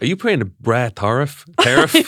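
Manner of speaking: attempted American accent, animated. Two speakers chatting about prices rising when shipping from abroad, attempted American accent. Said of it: "I meant to say it in an American accent".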